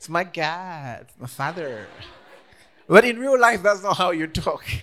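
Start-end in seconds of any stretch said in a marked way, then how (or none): 0.0-1.9 put-on American accent, very slow, God drawn out. Mimicking how others' accent turns American when praying, put-on American accent. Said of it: "how their accent becomes American".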